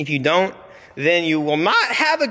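voice breaking, cracking upward mid-sentence. Closing a video, urging viewers to watch two more videos, voice cracking. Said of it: "my voice cracked".

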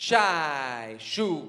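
slow, careful, deep pronunciation. Leading a group in practising a phrase, said slowly. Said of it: "Let's try it slowly".

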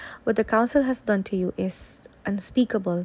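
ordinary delivery, nothing marked

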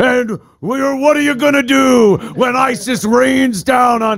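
put-on very high-pitched, hammy macho tough-guy voice. Joking about a terrorist threat, doing a Macho Man impression. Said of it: "this Macho Man impression".

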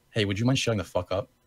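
ordinary delivery

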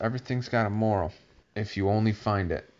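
ordinary delivery

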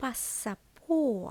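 stress on по, паса said lightly. Explaining a verb with the particle по, stress on по. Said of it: "Наголос на по".

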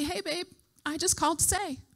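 soft, sweet little voice. Retelling expecting their mom on the phone, imitating her sweet little voice. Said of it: "my mom's sweet little voice to say".

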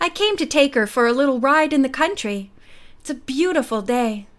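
plain reading voice

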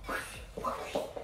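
soft, breathy, whispered whoosh sound effect.

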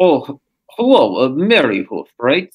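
rough, vague put-on Eastern European accent. Player voicing a character greeting another character, in a vague Eastern European accent. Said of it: "I'll do a vaguely Eastern European".

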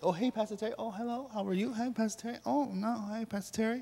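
very quiet, soft, sweetly innocent little hellos. Pastor Terry retelling the congregation's first-day greetings; imitating an innocent greeting. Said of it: "you did it so innocently".

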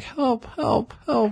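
real quiet, very high, pleading cries. Retelling a scene where a man grabs Jacob Tremblay; real quiet. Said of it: "Like real quiet".

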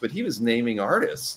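plain

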